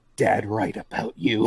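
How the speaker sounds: quiet, angry whispering. A player's character leans into another character's ear, angry whisper. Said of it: "I just whisper in Holden's ear".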